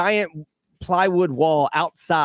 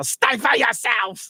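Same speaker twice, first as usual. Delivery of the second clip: put-on scolding shout, pitched higher; 7 semitones higher than usual. Retelling how a high school teacher yelled at talking students: imitating Mister Williams yelling in a thick German accent. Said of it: "he had a very thick German accent, and he would yell".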